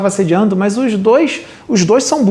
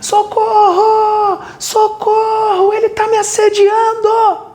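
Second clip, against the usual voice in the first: mock very high, shrill, drawn-out screaming; 13 semitones higher than usual. Telling a story, the speaker acts out the girl approached by a young man: imitating a girl screaming for help. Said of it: "essa menina começa a gritar assim".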